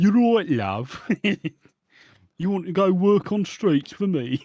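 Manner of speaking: Birmingham accent. Imagining what a pimp character with no lines sounds like, in a Brummy accent. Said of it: "I'm doing a Brummy accent".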